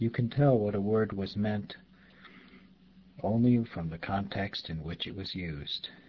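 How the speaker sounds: usual speaking voice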